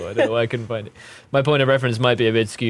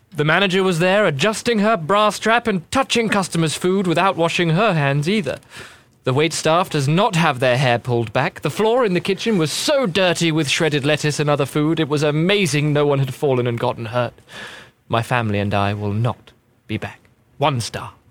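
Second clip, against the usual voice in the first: put-on proper British accent; 5 semitones higher than usual. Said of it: "I'm gonna do this proper British".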